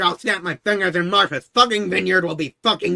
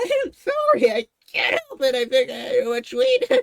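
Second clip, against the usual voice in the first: high, swooping speech laced with laughter; 7 semitones higher than usual. Asked why they keep laughing, the speaker apologizes while laughing while talking. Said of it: "You're you're you're still laughing".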